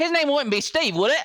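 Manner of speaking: very high-pitched, put-on Australian accent. Showing how the line sounds when he tries the voice, in an Australian accent. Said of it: "why are you Australian?".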